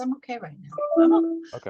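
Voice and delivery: gentle, quiet, soft, slightly high murmur to oneself. Showing how to say the phrase out loud, but softly: soft. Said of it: "but softly".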